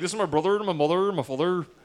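Cornwall accent. Showing the others a Cornwall accent when asked: Cornwall accent. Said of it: "That's like what Cornwall is".

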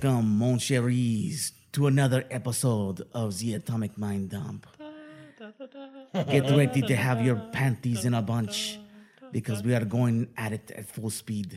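low, hushed, seductive put-on French accent. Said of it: "For a sexy French accent".

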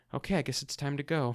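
small, little, quiet, subdued voice. Retelling a woman's line from a scene, in a small voice. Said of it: "says in this small voice".

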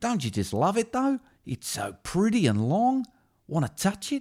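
put-on very high, swooping, sing-song Australian accent. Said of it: "when [name] met [name]".

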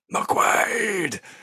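mock full-voice shout. Recounting how a man shouts a name, retelling a shout. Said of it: "it's at the top of his voice".

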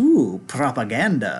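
vampire villain voice, played as the count. Retelling a favorite movie line where Dracula recoils then smiles: imitating Gerard Butler's Dracula, smiling. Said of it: "he gets this smile and he goes".

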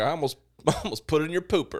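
put-on hint of a Southern accent. Retelling own past words from an old encounter: a little southern accent. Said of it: "and I said it in an accent".

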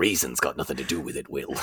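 put-on pirate voice like in movies. Recalling a Pirates movie scene, the speaker quotes the line: Jack Sparrow impression. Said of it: "he does an impression of Jack Sparrow".

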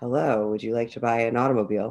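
smooth, sexy, low sultry voice, quick. After being told their low voice sounds sexy, demoing a sales call in a low sexy voice. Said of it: "solicit my voice for calls later".

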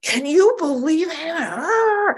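put-on worked-up raving. Retelling calling their sponsor and raving about him, retelling own raving. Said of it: "I call my sponsor up and I'm raving".

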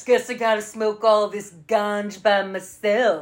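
California surfer-dude voice. Quoting a man with a bag who must smoke alone: california surfer talk. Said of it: "The way he talked reminded me of".

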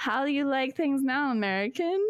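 bad, terrible put-on Austrian accent. Retelling what Sandra said with her arm around him, in Sandra's terrible Austrian accent. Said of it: "That's my terrible Austrian accent".

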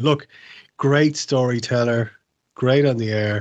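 usual speaking voice

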